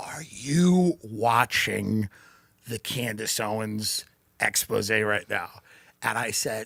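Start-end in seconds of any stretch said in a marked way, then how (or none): 0.0-5.5 whispered voice. Retelling what a hotel clerk said in the lobby: imitating someone whispering. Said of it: "he's whispering in the lobby of the hotel".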